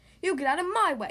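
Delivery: insistent, demanding tone. Boris, pushed aside by the monster Bella, answers her, demanding. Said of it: "demanded Boris".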